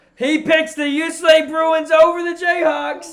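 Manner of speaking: thrilled, loud outburst, very high pitched. Announcing the other person's pick to the fans, in a loud excited voice. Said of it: "that loud for me".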